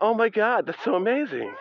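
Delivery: phony, forced, smiley excitement, pitched very high. Joking to listeners about giving fake smiley news every day, in a fake smiley voice. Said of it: "fake smiley news".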